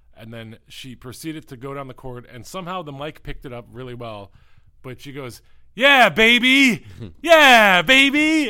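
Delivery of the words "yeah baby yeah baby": put-on very loud, very high, very slow shout, stretched baby. Telling how a player's on-court shout got picked up by the mic, retelling Ariel Powers' shout. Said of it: "she was shouting".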